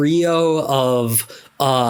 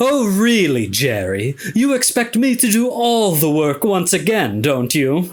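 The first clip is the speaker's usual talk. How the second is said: put-on British accent, pitched up; 5 semitones higher than usual. Voicing a genius pet space monkey complaining to Jerry: British accent. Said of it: "he talks with a, a British accent".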